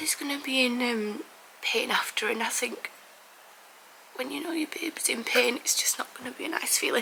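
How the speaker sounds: speaking through tears, tearful crying voice. Parent filming herself before her baby's small surgery, crying. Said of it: "I'm crying already".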